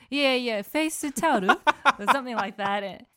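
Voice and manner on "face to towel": pitched-up put-on Japanese accent on English words. Retelling asking someone for a face towel, Japanese accent. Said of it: "pronounce that in with a Japanese accent".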